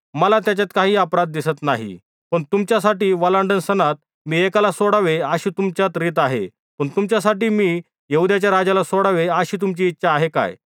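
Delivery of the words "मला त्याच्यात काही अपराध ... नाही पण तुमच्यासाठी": plain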